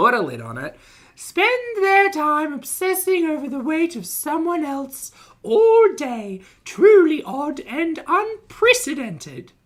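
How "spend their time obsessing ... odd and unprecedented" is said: very high, squeaky voice pushed way up. Reading out a YouTuber's angry community post, imitating Foodie Beauty's voice. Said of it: "Let me see if I can find the voice".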